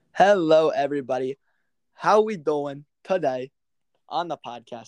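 slow, put-on New York accent. Podcast host greeting listeners to open the episode; fake New York accent. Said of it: "my New York accent".

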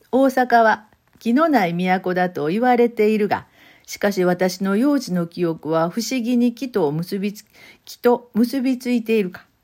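read aloud in Kansai dialect. Reading the novel's opening line again, this time in Kansai dialect. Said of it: "関西弁で読んでみようかな".

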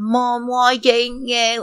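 angry, high, drawn-out yelling through the nose. Retelling how a woman yelled at the camera to her mom, imitating her yelling. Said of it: "she was yelling at the camera".

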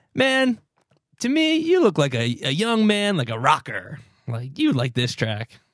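hard-sell, swooping used-car-salesman patter. Teasing the other speaker for pitching a track to a man; used car salesman impression. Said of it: "You sell him like a used car salesman".

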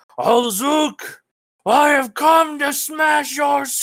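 booming roaring yell. A warrior yells a challenge, matching a huge beast's volume, thunderous roaring yell. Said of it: "Krogar's most loudest, thunderous roar, ... he yells".

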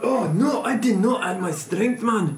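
loose put-on Scottish accent. Mid-game, a player speaks in a vaguely Scottish accent. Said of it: "Sorry, I don't know what accent this is".

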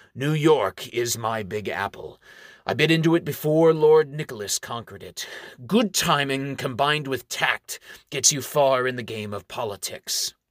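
ordinary delivery, nothing marked

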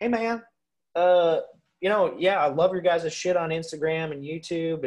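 slow Deep South drawl, "love" drawn out. Retelling a funny acquaintance's first hello at game fair, in a put-on Deep South accent. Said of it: "he talks like this all the time".

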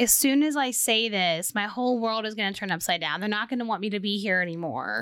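ordinary talk, nothing marked

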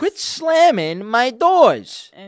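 mock very high, very loud, shrill, very slow griping. Imitating a protective friend complaining about slammed car doors. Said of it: "is that what he sounded like?".

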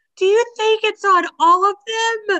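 mock frantic panic, pitched way up and loud. Telling a story about copies, imitating a woman freaking out. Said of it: "And she starts freaking out".

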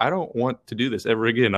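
ordinary delivery

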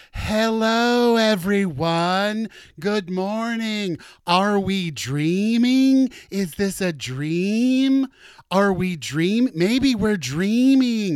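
put-on high, loud, very slow childlike drawl, dream stretched. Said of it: "He just kept saying dreaming in that voice".

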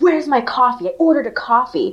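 put-on irate voice, abruptly turning furious. Retelling a customer's outburst at a server: imitating an angry customer. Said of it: "the customer got super pissed and just suddenly was like".

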